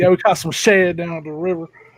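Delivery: put-on local Virginia accent. Retelling what the locals said about catching bait fish: imitating the local Virginia accent. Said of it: "I'm trying to do the accent".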